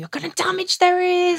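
very high, shrill, screamed scolding tone. Retelling how mum screamed about the loud radio: imitating mum screaming. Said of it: "she'd be screaming".

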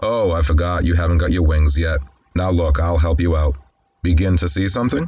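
ordinary talk, nothing marked

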